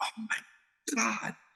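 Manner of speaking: sneaky, hushed, soft, breathy whisper. Retelling sitting with the TV off after the dad left: retelling a whisper.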